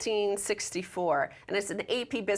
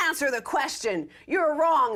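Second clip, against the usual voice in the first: put-on yell, shouting, pitched much higher; 5 semitones higher, 3 dB louder than usual. Recounting a report on a debate, acting out audience members' yell at a panelist. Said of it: "they yell".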